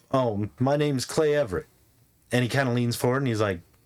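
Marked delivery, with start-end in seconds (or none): none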